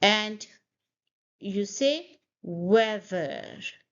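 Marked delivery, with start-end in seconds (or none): 2.4-3.6 slow "weather" with stress on first syllable. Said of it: "stress on the first syllable".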